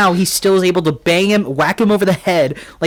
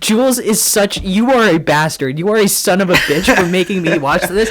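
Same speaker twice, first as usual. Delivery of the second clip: usual speaking voice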